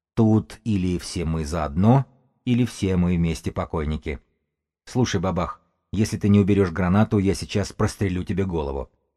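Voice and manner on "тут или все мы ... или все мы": plain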